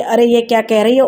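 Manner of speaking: ordinary delivery, nothing marked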